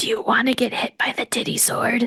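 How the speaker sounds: ghostly whispered voice. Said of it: "This is like the episode of Whispers".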